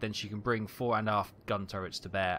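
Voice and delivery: ordinary talk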